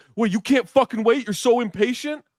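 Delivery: put-on hollering, very high-pitched. Retelling what another driver yelled at them: imitating someone yelling. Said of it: "he starts yelling at me".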